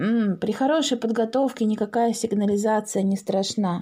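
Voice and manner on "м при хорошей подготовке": plain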